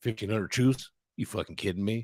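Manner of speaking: put-on deep Southern accent. Mimicking right-wing voters reacting to the troop number, in a deep southern accent. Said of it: "like a deep southern accent".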